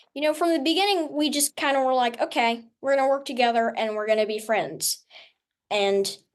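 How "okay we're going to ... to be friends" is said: normal talking voice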